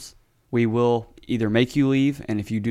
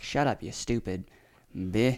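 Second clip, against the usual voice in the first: put-on country woman voice, quieter; 7 dB quieter than usual. Retelling what a lady shouted at another car: imitating a redneck lady. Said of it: "super redneck lady gets out of her car".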